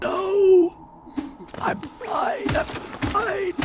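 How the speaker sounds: hoarse, breathy, croaky whisper, very slow. Retelling answering her while sick: imitating own croaky voice. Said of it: "I was croaking at her".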